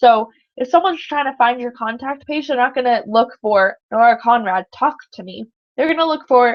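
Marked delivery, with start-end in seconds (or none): none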